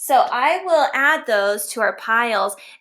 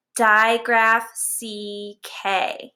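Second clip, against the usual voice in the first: very slow, stretched out, stressed digraph. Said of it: "Can you try that with me right now?".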